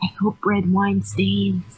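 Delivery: speaking in a whisper. Speaking in character to the guy seated alongside: whispering. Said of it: "I whisper to the guy next to me".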